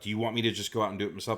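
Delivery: mild, toned-down, scolding yell. Retelling a film scene where she yells at him: imitating someone yelling. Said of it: "yelling at him".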